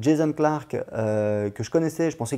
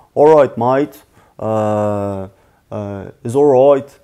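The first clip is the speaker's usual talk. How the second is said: very slow, loud, put-on Australian drawl; 3 semitones lower, 10 dB louder than usual. A French speaker comparing accents imitates Australians: Australian accent. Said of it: "Alors que les Australiens, c'est plus euh".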